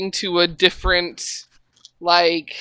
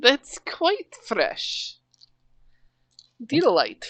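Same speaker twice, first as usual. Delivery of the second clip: swooping, sing-song put-on accent, pitch up and down; 4 semitones higher, 6 dB quieter than usual. Voicing Queenie as she looks at a carcass: Queenie's accent. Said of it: "And now I'm doing it".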